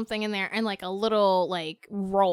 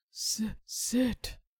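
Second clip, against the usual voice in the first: low, hushed whisper; 9 dB quieter than usual. Giving a command to listeners' dogs over a speaker: low dog command voice.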